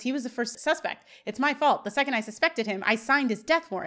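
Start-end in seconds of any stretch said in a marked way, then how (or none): none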